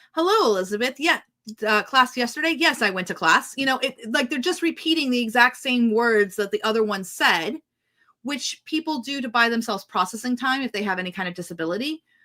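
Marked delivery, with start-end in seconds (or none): 0.2-3.6 very formal, overly proper delivery. Acting out a character's reply in AI-written dialogue: imitating very formal speech. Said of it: "in a very formal way".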